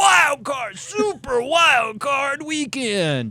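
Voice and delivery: very high, booming, very drawn-out hype announcer voice. Showing how to say excessively capitalized text, monster truck announcer voice. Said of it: "monster truck announcer voice".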